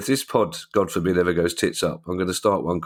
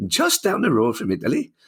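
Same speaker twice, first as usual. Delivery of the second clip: put-on Geordie accent, sing-song, man's voice; 8 semitones higher than usual. Repeating own words about france being down the road: geordie bloke voice. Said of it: "it's more Geordie than Welsh, and a bloke".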